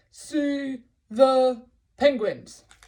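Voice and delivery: very loud, cross, grouchy tone. Leading a listener through a practice sentence, in a grumpy voice. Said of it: "let's do this one using a grumpy voice".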